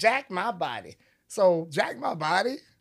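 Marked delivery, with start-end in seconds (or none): 0.0-1.0 put-on elderly woman voice. Telling the story behind a phrase, voicing what an old lady would say: imitating an old lady. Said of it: "supposed to be an old lady saying".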